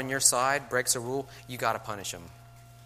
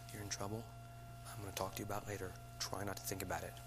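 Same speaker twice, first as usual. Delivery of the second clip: very soft whisper. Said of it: "Just come up and whisper to them".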